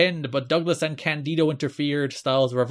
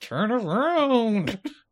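very slow, higher mock monster voice, taunting. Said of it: "He's like".

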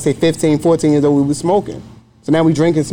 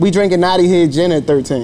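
usual speaking voice

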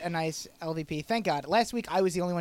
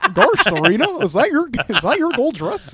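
goofy cartoon-style voice, much higher pitch; 7 semitones higher, 13 dB louder than usual. Asked how the Dan voice went last time, performing it: goofy cartoon voice. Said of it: "Was it like a Garsh Mickey?".

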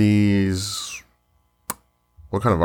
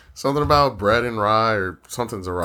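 ordinary delivery

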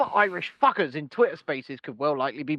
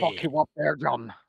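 harsh, rough, guttural Irish accent, lower and quieter; 3 semitones lower, 4 dB quieter than usual. Describing an accent, the speaker demonstrates a harsh, guttural Irish accent. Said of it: "harsh, guttural Irish accent".

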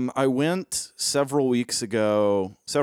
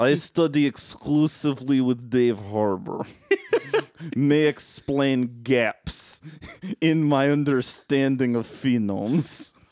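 fake, put-on Russian-accented English; 2 semitones higher than usual. An American speaking in character as a Russian: put-on Russian accent. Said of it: "That is the best Russian accent I've ever heard an American do".

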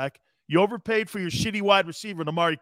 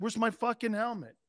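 mock fed-up, angry, exasperated outburst; 4 semitones higher, 8 dB quieter than usual. Retelling being taken out of games, missing helmet: retelling own angry shout. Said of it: "I'd be like this".

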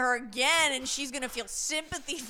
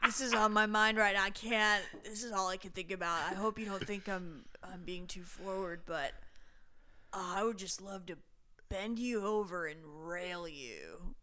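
flirting guy voice, lower and quieter; 4 semitones lower, 6 dB quieter than usual. Reenacting what a guy said to her at a bar: reenacting a guy's pickup line. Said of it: "reenactment real quick".

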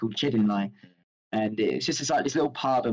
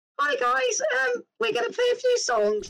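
prepubescent little voice, very high, rough, creaky. Recalling walking up to the mic at early gigs, imitating prepubescent voice. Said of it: "your prepubescent voice as well".

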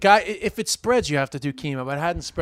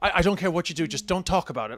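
put-on speaking as an Irish woman, Irish accent; 4 dB quieter than usual. Contrasting American women with Irish women: imitating an Irish woman. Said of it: "an Irish woman would be like".

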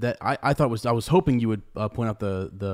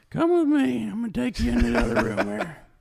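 very high, swooping, sing-song grandma voice; 12 semitones higher than usual. A father retells his young daughter leading him away, in grandma voice. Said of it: "She's got grandma's voice now".

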